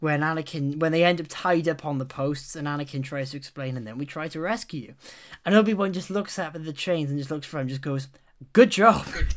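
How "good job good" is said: dry, mocking, loud sarcastic approval. Retelling a character's reply to a rescue attempt: retelling a sarcastic remark. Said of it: "it's just so sarcastic".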